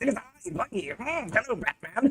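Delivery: villain voice, slow and swooping. Mimicking how the voice actor plays Buggy, in a Joker voice. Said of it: "gives him the Joker voice. ... It sounds like this".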